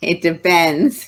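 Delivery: speaking while laughing. Answering a rapid-fire cake-or-pie question, laughing.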